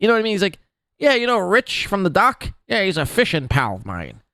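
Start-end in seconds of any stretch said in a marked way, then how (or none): 1.0-4.1 put-on old-timey 1940s newsroom patter. Imitating a grandpa talking about a fishing pal: 1940s newspaper guy voice. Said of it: "talks like a nineteen forties newspaper guy".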